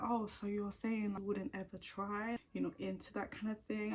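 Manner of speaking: plain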